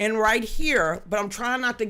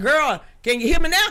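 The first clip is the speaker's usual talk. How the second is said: loud shouting; 4 semitones higher, 5 dB louder than usual. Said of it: "shouting at people".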